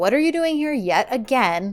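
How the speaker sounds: plain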